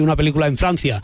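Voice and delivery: ordinary talk, nothing marked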